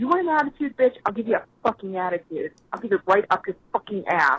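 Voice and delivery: furious, sassy outburst full of attitude. Ranting in a voicemail about coworkers: angry with attitude. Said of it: "what the fuck was with that attitude?".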